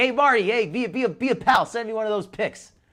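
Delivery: eager, coaxing pleading. Reacting to a prank call, mimicking the caller begging for a picture: imitating the caller as eager. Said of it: "he almost sounds like he wants to see it".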